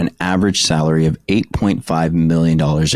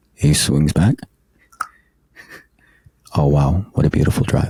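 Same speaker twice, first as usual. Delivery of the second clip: televised golf commentator voice. Recalling golf on TV as a kid, doing a golf announcer impression. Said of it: "that announcer's voice".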